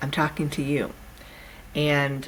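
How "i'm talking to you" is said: ordinary talk, nothing marked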